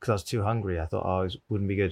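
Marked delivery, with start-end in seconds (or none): none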